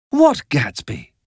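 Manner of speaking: insistent, urgent, pressing tone. Daisy reacts when Miss Baker mentions Gatsby: urgently. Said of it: "asked Daisy urgently".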